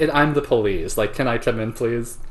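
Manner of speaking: usual speaking voice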